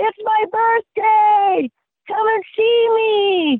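very high, stretched-out, slow all-out scream. On a birthday hike with kids, calling for Sasquatch, retelling a scream. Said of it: "I'm screaming as hard as I can".

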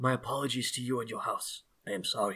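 barely audible, very quiet, apologetic murmuring hush. Voicing a mage who apologizes after casting shield: quiet apologetic voice. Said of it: "he's like, quietly, he's like".

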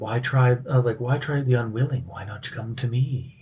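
enticing, alluring, beckoning siren-like voice. Voicing a hidden figure calling from deeper in the alleyway: siren-like voice. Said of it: "siren-y kind of voice".

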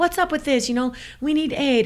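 mock furious, raging, high livid scream. A racer retells confronting the race director at the aid station, retelling her own screaming. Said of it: "I'm like screaming".

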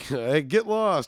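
playful, joking, not serious tone. Showing how they'd jokingly answer a knock at the door: joking tone. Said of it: "I would jokingly, I'd be like, ... I'd say it like that".

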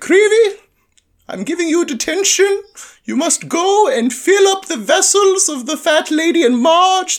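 very high-pitched, put-on schoolteacher voice. Speaker imagines McGonagall handing out a detention, in McGonagall voice. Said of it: "I love your McGonagall voice".

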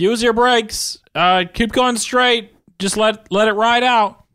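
shrill yelling, pitched way up high. Retelling shouting to someone speeding downhill ahead of him: retelling a yell. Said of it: "yelling like".

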